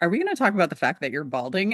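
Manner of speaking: blunt, direct, fast and swooping delivery. Retelling his dermatologist's question as he gets ready to leave, imitating deadpan, direct delivery. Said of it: "her delivery is very deadpan and very direct".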